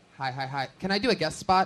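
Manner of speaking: sudden, nervous blurting, acted out. Retelling how a nervous, polite comic asked for a guest spot: imitating Gabe blurting nervously. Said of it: "he just blurted".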